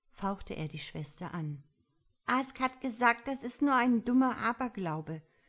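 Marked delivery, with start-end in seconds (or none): 2.3-5.3 stubborn, defiant, raised, high-pitched voice. A girl answers her brother's hissed warning, protesting defiantly. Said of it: "begehrte sie trotzig auf".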